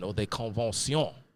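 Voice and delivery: terrible French accent on the word convention. Naming the french assembly in a french way: terrible french accent. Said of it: "Pardon my terrible French accent".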